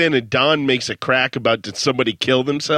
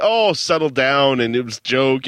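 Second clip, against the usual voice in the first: ordinary delivery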